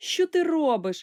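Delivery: loud, high crying out. One character questions another who is typing at a keyboard, exclaiming. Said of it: "вигукнув Сашко".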